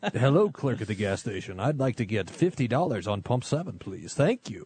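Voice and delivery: put-on radio announcer voice. Joking about asking the gas station clerk for fuel: radio voice. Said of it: "my radio voice is probably good for ministry".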